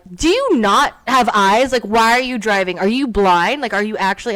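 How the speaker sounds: furious, loud screaming at the top of lungs. Retelling road rage at a driver in the next lane, retelling screaming at a driver. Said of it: "I am screaming at her".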